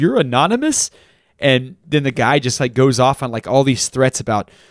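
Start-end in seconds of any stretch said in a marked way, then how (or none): 0.0-0.9 put-on high incredulous laugh through the words. Retelling a phone call where Alex Goldman answers the caller, imitating Alex Goldman laughing. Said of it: "Alex Goldman starts laughing".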